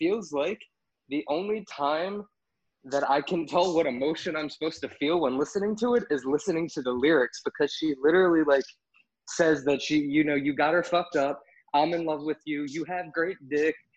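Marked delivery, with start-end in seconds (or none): none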